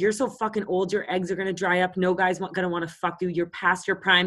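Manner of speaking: mock angry outburst, ranting. Retelling how a guy at a bar went off on the speaker, mock angry outburst. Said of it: "This guy went off".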